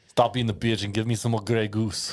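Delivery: put-on Austrian movie tough-guy accent. Trying out an impression for the others, Arnie impression. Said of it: "You can do a pretty good Arnie".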